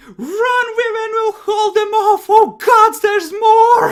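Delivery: very loud, high, shrill panicked screaming. Voicing the party's allies as a creature comes flying out of a tree: screaming. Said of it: "are screaming".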